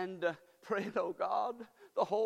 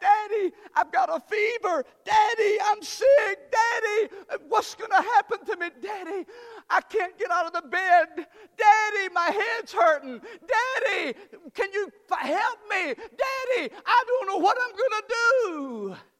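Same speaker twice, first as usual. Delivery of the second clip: put-on child voice, very high, very loud, crying; 10 semitones higher, 11 dB louder than usual. Speaker acting out a sick girl calling to her daddy, acting out a girl crying for help. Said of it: "crying out for help".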